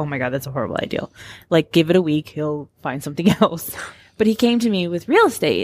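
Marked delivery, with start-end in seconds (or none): 0.0-1.1 mock under-the-breath mutter, quieter and lower. Recalling reacting to Tom's idea, retelling a mutter under breath. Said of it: "under my breath".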